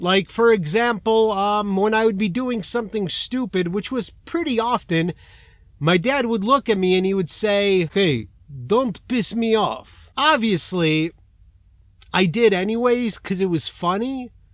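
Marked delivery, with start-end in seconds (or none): 7.9-10.1 put-on heavy Polish accent. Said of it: "They all have heavy accents".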